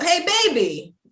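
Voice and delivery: high, laughing street-dealer character voice.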